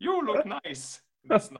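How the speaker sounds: put-on high Finnish-accented English. Retelling what an older woman said in an elevator, finnish accent. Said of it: "Finnish accent".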